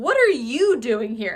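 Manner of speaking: "are" hit hard, slow and loud. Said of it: "But I think the real question is".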